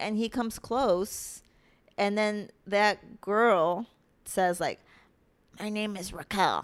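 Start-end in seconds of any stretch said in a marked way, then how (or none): 5.6-6.6 deliberately put-on macho, manly voice. Retelling a story, imitating a girl at a dance introducing herself, in a put-on manly voice. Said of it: "a manly voice".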